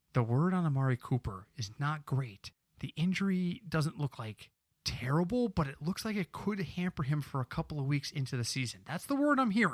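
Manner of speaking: secretive, confiding, soft, hushed half-whisper. Passing inside information to a co-host, half-whispering. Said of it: "I'm whispering. You know what it means when I whisper".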